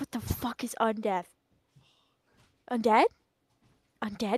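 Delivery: whispering under breath. Her character goes to the corner to pray, whispering to herself. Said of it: "I'm whispering it to myself".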